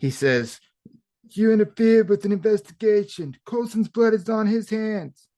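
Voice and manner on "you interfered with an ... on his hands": clumsy, bad, very high put-on voice. Recapping a show's scene, quoting what one character says: bad voice impression. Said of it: "Those are bad voice impressions".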